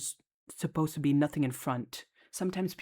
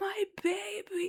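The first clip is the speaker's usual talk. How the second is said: very high, shrill, dramatic scream. Retelling how a mother ran in after a rescue: imitating a mother screaming. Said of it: "She was screaming like".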